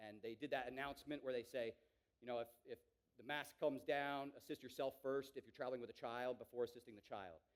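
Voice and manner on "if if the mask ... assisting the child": normal talking voice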